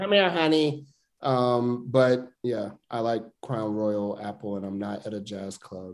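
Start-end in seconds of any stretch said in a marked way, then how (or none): 0.0-0.9 put-on older, sixty-plus smoker's voice. Mimicking women over sixty who smoke at bars, imitating older bar women's talk. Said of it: "sit at bars with smoke and talk like this".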